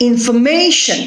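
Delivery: "information" with stress on third syllable MA. Explaining word stress, the speaker repeats the word: stress on MA in information. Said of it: "It is on the third syllable".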